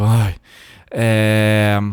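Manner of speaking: loud, drawn-out, mocking eye-roll sigh.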